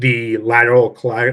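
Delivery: ordinary delivery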